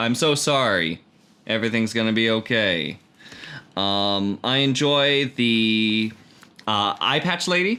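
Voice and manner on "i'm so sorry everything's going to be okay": said straight, matter-of-fact, no show. Describing the characters of a show, in Ed's monotone voice. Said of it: "in his monotone way".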